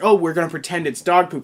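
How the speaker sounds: ordinary talk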